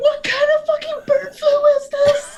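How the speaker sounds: very high-pitched, shrill, shrieking scream. Player reacting as a nurse with blade arms steps in, screaming. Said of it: "I'm like screaming".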